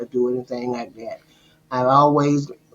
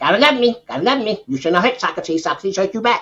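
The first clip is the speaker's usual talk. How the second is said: put-on parrot voice, much higher and faster; 7 semitones higher, 3 dB louder than usual. Describing the parrot in their story, the speaker does Socrates the parrot's voice. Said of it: "doing the voice of the parrot".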